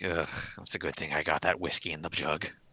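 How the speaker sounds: soft, grumbling mutter under the breath, to oneself. Playing a character who mutters under their breath: muttering under breath. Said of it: "I just kinda mutter under my breath".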